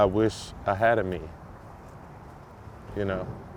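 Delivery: soft, emotional, choked-up voice. Admitting they're getting emotional while talking about their Vibe Tribe, choking up. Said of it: "I'm sorry, I'm getting emotional".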